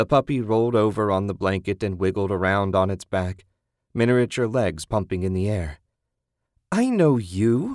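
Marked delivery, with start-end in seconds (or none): 6.7-7.8 high little squeal, words squealed out. Susan squeals at the puppy wiggling on her blanket. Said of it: "Susan squealed".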